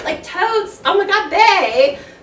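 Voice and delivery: put-on high-pitched valley girl voice. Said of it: "We gotta hear it".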